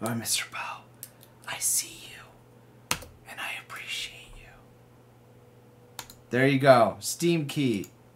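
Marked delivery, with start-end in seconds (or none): 0.0-6.0 slow, drawn-out, breathy hushed whisper. Thanking a raffle winner, playfully: whispering. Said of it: "I'm whispering you right now".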